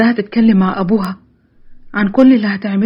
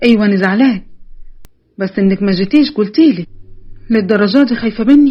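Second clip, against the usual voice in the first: plain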